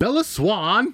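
furious high-pitched yell. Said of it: "You sound like a pissed off teacher".

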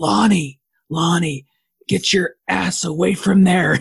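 creepy calling-out voice, pitched a bit high. Retelling a movie scene where the doctor calls out to a kid, in Loomis's creepy voice. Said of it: "makes like this creepy voice".

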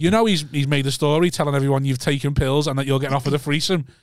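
normal talking voice

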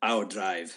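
delivered like a movie cyborg. Joking about a movie star hit by a bus: Arnold Schwarzenegger Terminator voice. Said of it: "like he does in Terminator and says".

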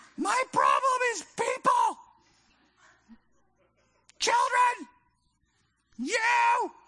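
play-acted, very high, rising furious angry outburst. Acting out snapping back at the seagulls, retelling an angry outburst. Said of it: "I just get so mad".

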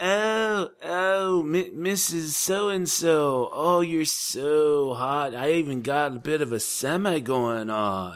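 slow whine, drawn out on "so". Answering a request to imitate an actor's character: Pauly Shore voice. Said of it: "Can you do a Pauly Shore voice?".

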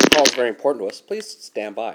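loud, canned, automated phone hold recording. Filling time while the other caller steps away: imitating a phone hold message. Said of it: "Hold on one second".

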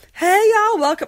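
very high, loud, friendly put-on Southern accent. Speaker imitating a friendly nurse greeting visitors at the desk, put-on Southern accent. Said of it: "I'm also going to do some Southern accents".

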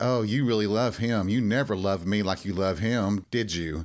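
put-on sarcastic voice. Retelling what a previous boss said: imitating a sarcastic remark. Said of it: "he was being very sarcastic and he just said".

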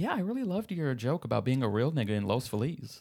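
put-on older woman voice, comedic. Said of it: "You gotta do the voice".

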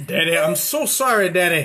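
put-on desperate pleading voice. A father retells his child Gunner's apology: imitating Gunner, like a crackhead. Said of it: "Like a crackhead".

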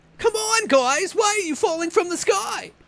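very high-pitched, loud, slow, drawn-out movie-star voice. Joking about the movie The Happening: Mark Wahlberg voice. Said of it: "my Mark Wahlberg impersonation".

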